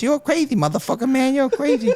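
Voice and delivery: very high-pitched voice. Retelling what a man said to him when he saw a snake: Mike Tyson high-pitched voice. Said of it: "he's saying to me in a high pitched voice".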